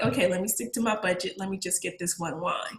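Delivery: ordinary delivery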